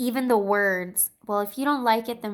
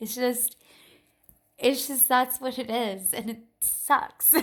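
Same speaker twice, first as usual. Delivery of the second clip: words spoken through laughter; 3 semitones higher than usual. Explaining why a tarot card is unreliable: laughing while talking. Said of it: "That's why I'm laughing".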